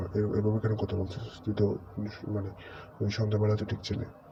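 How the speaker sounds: plain reading voice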